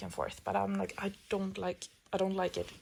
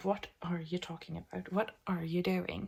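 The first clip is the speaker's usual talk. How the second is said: put-on annoyed voice. Retelling how he reacted while being quite annoyed: imitating an annoyed voice. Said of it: "He is quite annoyed with me".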